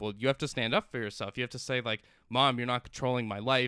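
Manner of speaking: ordinary delivery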